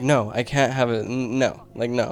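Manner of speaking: slow, stressed-out, repeated no. Retelling own reply to a friend's text: imitating own stressed self. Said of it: "I was, like, stressed".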